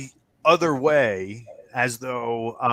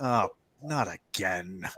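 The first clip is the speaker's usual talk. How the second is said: weary exasperated monk voice, lower and quieter; 5 semitones lower, 8 dB quieter than usual. Game narrator voicing the monk who wagered with the players: weary monk. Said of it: "He says".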